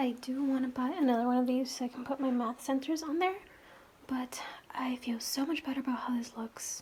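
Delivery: quiet whisper. Talking about organizing math centers with people in the other room, whispering. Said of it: "Sorry if I'm whispering".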